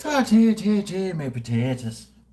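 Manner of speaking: put-on Irish accent. Setting up vodka pickle juice, the speaker breaks into a put-on irish accent. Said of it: "something that you need an Irish accent for".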